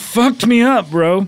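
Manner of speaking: sounding high on cocaine. After a comedy bit went wrong, sounding like on cocaine. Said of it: "Now it sounds like you were just doing cocaine".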